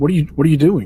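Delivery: high, fast, startled, alarmed blurted outburst.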